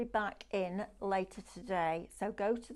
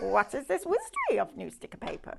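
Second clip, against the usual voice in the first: high, loud voice with swooping pitch; 6 semitones higher, 5 dB louder than usual. Rereading a viewer's comment aloud in the voice of Yoda. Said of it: "I need to do that with the voice of Yoda".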